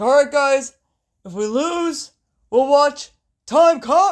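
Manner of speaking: drawn-out, high, loud delivery. Giving a pep talk to a losing team: Tony Khan impression. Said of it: "Tony was like".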